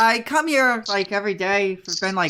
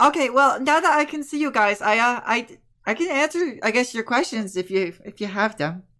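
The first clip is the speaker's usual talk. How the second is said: put-on boyish young lad character voice; 4 semitones higher than usual. Voicing a young lad, about eight, answering the party: voicing a young lad. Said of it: "He goes".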